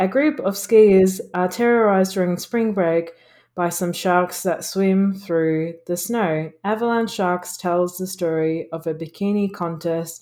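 plain

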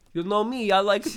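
put-on Russian accent. Joking that a movie character secretly works as a masseuse: Vlad with a Russian accent. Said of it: "he's got this Russian accent".

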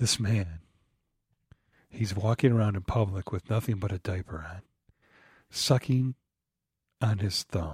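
slow, low, sultry, drawn-out sexy tone. Asked to describe the man in the little film, saying it slow and sexy. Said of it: "say it slow and sexy".

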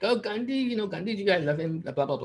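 put-on Indian English accent. Mocking people who romanticize Gandhi, imitating an Indian accent. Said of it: "Don't do the Indian accent".

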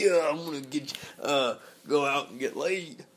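hyper, pumped-up wrestling-promo voice. Imitating a hyper college friend who talked like Macho Man Randy Savage. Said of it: "he always used to talk like Macho Man Randy Savage".

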